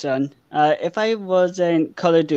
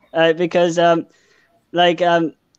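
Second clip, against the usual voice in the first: ordinary talk, nothing marked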